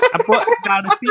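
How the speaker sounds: weird mock Scottish accent.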